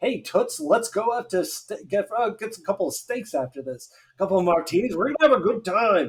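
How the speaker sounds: high, put-on old man voice. Voicing the baby husband in a photo inviting his wife out: put-on old man voice. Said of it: "an expression on his face that's just like".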